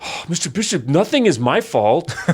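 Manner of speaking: high, whiny, put-on teenage voice. Acting out a teenager's excuse to Mister Bishop: teenager voice. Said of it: "So I did kind of a teenager voice, like".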